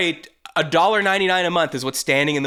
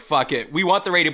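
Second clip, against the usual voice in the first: ordinary talk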